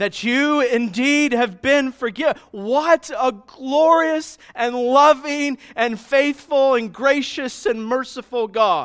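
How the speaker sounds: very loud, high-pitched all-out yell. Reading aloud a line written in all caps in notes: yelling. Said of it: "Which means I'm yelling it".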